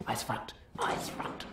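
slow, low, urgent, breathy hushed whisper.

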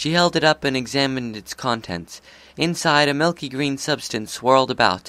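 ordinary delivery

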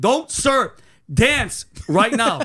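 imitated high, drawn-out yell. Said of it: "they're yelling at me".

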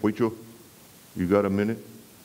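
put-on male Brooklyn accent. Retelling a visit on the porch, the speaker quotes Jack Galbraith in his Brooklyn accent. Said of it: "he said in that Brooklyn accent".

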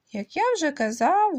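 loud, stern delivery. The narrator repeats his point after being interrupted, loud and stern. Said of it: "голосно і суворо повторив я".

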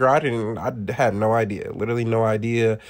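ordinary talk

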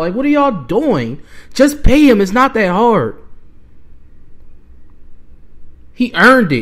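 angry, mad, heated ranting. A fan complaining that the team won't pay its player, so mad. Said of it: "but I'm so mad right now".

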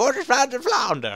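put-on Southern American accent. Speaker calls their attempt terrible, then tries again: bad southern american accent. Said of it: "trying to do a Southern American accent".

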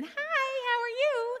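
tiny, very high, slow, drawn-out little voice. Retelling a stranger speaking from the next toilet stall: imitating a little voice. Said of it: "the voice came again".

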